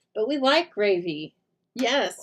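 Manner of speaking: sudden, unplanned, drawn-out, high yell. Showing paper crafting supplies, agreeing that extras are welcome: yelling. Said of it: "sorry, I yelled that".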